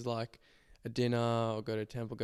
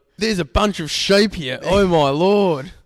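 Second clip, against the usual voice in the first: put-on loud, high-pitched Australian accent, belted out; 8 semitones higher, 16 dB louder than usual. Telling the other speaker he resembles an Aussie abroad, in a Crocodile Dundee Aussie accent. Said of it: "some Aussie in like".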